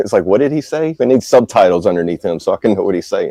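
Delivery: ordinary talk, nothing marked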